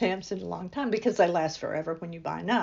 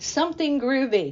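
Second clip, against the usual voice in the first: play-acted cheery, good-humoured, jovial, pitched up; 6 semitones higher, 5 dB louder than usual. Retelling their reply to a woman at the post office asking what style, jovial. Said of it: "in a return jovial voice".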